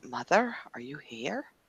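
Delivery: barely-there, very quiet half-whisper. Playing a character looking around, calling softly: soft half-whisper. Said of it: "very, very softly whisper".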